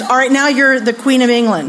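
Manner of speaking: usual speaking voice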